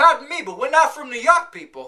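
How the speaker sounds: Boston-accented speech. Running through regional accents, the speaker does the Boston accent: Boston accent. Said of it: "people trying to do a southern accent".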